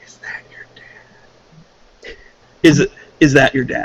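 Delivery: slow, very quiet, hushed, barely-there whisper. Leaning over to Claudia in character so nobody hears: whispering very quietly. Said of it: "kind of whisper very quietly to her".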